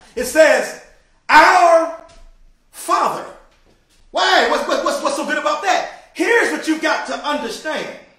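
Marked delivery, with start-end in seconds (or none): 0.2-3.3 loud, raised shouting. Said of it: "I'm gonna go ahead and shout".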